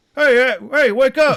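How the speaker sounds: very loud, very high, shrill yell. Recounting being woken before dawn as a child, imitating his dad's voice. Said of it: "Do your dad's voice".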